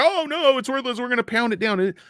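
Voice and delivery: scornful, high, derisive caricature voice. Imitating the short sellers dismissing the stock: mocking the short sellers. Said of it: "The short's like".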